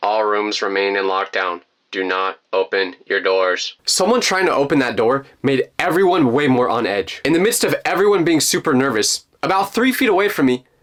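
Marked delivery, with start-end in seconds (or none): 0.0-3.8 very low, flat, deadpan monotone announcement voice. Retelling the vice principal's lockdown announcement over the PA, in a flat monotone. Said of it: "speaks in a monotone voice going".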